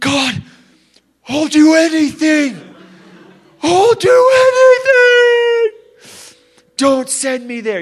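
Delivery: very high, loud, tearful crying plea. Recalling waking from a night terror about hell, retelling own tearful plea. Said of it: "I'm just like crying".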